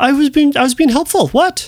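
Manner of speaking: high-pitched dog voice.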